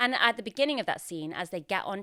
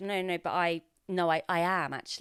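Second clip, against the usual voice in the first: ordinary delivery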